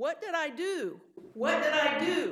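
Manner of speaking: loud, high-pitched shout.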